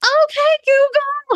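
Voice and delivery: play-acted very high, loud shriek. Retelling calling out to a device that won't listen, imitating screaming. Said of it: "walking around my house screaming".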